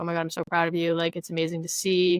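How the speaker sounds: normal talking voice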